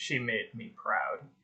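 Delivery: low, deep rumble of a fiery giant. As the party passes under a fiery giant's legs, a voice speaks: deep, rumbling voice. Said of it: "it was a deep voice that said".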